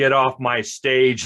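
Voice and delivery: slow, strong, forceful, powerful commanding voice. Recalling ordering a kid off the stage before the show, retold strong, powerful voice. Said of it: "in a very strong, powerful voice".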